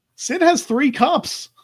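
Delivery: high, slow, stretched-out mocking tone.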